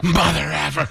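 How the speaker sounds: crazed, unhinged, high outburst with lunatic energy. Speaker retelling how their daughter said it, like the Pulp Fiction diner robber. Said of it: "she says it like she's been, like like uh, that lady from Pulp Fiction when she stands up and robs the diner".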